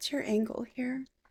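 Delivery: soft, hushed whisper. Whispering a question to Teddy while leaning down: whispering. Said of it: "whisper to Teddy".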